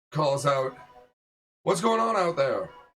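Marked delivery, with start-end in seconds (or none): 1.6-2.6 commanding, authoritative woman's voice, pitched up. A narrator voices someone calling out from inside, in an authoritative female voice. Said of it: "authoritative female voice".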